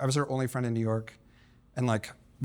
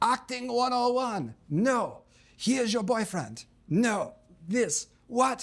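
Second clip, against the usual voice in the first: shrill, very high, furious screaming; 11 semitones higher than usual. Act out a man chewing out a model in rehearsal, imitating him screaming at her. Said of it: "he's just screaming at her".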